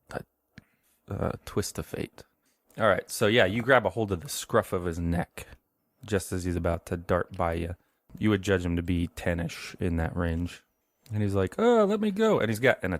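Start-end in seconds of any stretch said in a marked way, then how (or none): 11.6-12.4 put-on very high voice with thick Italian accent. Game master voices a boy of about ten grabbed by the scruff, Stanton, heavy Italian accent. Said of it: "like a heavy Italian accent".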